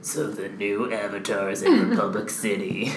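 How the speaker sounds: very slow, drawn-out, deep, gravelly menace. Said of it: "I'm gonna try and do the Iman voice, because in my head he sounds like Batman".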